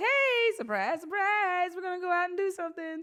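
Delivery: very high-pitched, excited, surprised voice.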